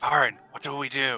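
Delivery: hushed half-whisper. A player's character crouches down beside Varen and asks him what to do, half-whispering. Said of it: "I'm gonna whisper".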